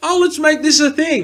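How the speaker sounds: high, loud, mock eager enthusiasm.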